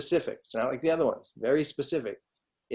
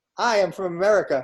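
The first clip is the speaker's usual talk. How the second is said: put-on, loud, pitched-up German accent; 6 semitones higher, 5 dB louder than usual. Speaking as an American visiting Germany, in a German accent. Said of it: "why would you be speaking with a German accent?".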